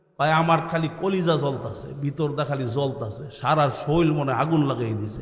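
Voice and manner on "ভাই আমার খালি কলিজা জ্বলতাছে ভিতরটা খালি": ordinary delivery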